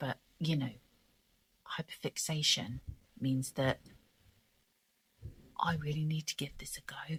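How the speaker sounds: quiet, soft, low voice. Speaker trying a tutorial late at night, talking quietly. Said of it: "I'm talking quietly".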